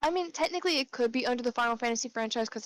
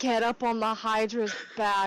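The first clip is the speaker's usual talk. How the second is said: ordinary talk, nothing marked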